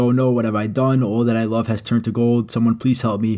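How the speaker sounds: ordinary talk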